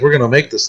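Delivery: ordinary talk, nothing marked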